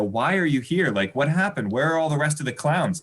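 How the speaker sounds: usual speaking voice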